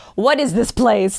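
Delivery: put-on, beautiful Russian accent. Retelling how a friend arrived at a motel: imitating Anna's Russian accent. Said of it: "Like this".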